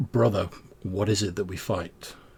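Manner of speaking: very calm, unruffled, composed tone. Playing a role-playing game, a player speaks their character's line, very calm voice. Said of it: "in like a very sort of calm voice".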